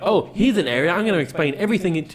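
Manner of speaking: grating, irritating, high, loud chatter. Complaining about game characters, the speaker mimics how they explain things: annoying high-pitched voice. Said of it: "in this hi- annoying high-pitched voice".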